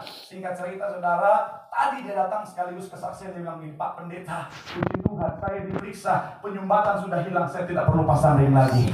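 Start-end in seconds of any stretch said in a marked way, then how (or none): none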